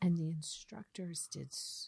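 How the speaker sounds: quiet, low whispering. Starting to tell the others what the instructors did: whispering. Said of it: "I feel like I'm whispering".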